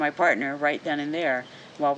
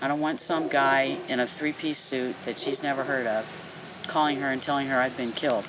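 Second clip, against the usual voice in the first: plain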